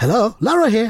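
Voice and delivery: mock telephone voice, imitated. Retelling how a man answers the phone, imitating his phone voice. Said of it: "Is that his phone voice?".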